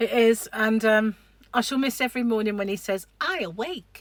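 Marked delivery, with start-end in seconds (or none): 3.2-4.0 tiny, high, squeaky little voice. Imitating what he says to her every morning, in a little squeaky voice. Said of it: "This little squeaky voice".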